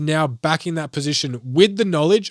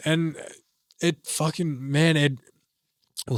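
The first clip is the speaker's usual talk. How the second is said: soft, choked-up voice catching with emotion; 5 dB quieter than usual. Speaker talking about his past and the future, getting choked up. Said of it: "little choked up for a second".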